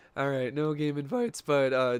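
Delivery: voice cracking. Player checking game invites aloud for an audience, voice cracking. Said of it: "that was a voice crack".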